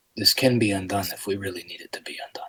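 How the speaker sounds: very quiet, hushed whisper, barely audible. Whispering to Caden in character so no one else can hear: whispering in character. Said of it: "I whispered to Caden so that no one else can hear".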